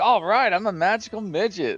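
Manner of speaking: excited voice. Retelling a new player's reply on a live stream: imitating an excited player. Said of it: "he was so excited".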